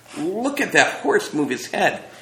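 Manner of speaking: awestruck, carried-away, high, excited cry. McTeague watches the kinetoscope with Trina, an excited cry. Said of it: "he cried excitedly".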